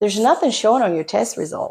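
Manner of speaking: ordinary delivery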